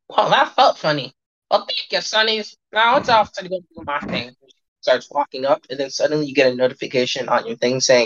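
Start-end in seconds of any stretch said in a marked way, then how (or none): 0.1-4.3 put-on high-pitched elderly woman character voice. Voicing an old lady in the void: old lady voice. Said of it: "you see that she just goes".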